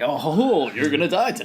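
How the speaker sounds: fun, dopey clown voice. Recalling the nineties It miniseries, doing a fun, dopey Pennywise impression. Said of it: "fun, dopey character".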